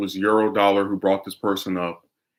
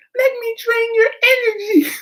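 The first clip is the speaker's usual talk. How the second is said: put-on very high, babyish robotic voice. Mocking women who drain men's resources, in a robot baby voice. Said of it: "with the robot baby voice".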